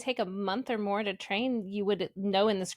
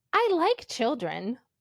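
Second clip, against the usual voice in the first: slow, friendly dragon voice. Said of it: "in a friendly voice".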